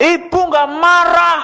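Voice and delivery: high, loud, defensive voice.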